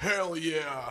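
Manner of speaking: poor put-on laughing voice. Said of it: "That's terrible Bezos impression".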